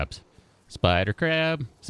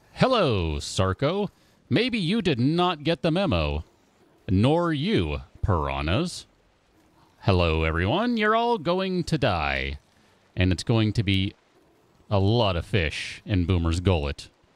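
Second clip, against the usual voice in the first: digitally altered voice, voice changer, changed cadence. Streaming a game, greeting the creatures and viewers through a voice changer. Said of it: "Let me turn that voice changer back on".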